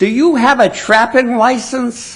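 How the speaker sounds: put-on officious, shrill, high-pitched bellow. Recounting the woman who answered his call about a trapped skunk, retelling a shrill bellow. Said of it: "she bellowed in a shrill voice".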